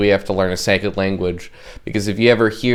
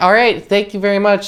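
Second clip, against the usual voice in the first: very high, plain, bland service-counter cashier voice; 11 semitones higher than usual. Showing how they talk when checking IDs at work, in a plain cashier voice. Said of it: "very plain voice".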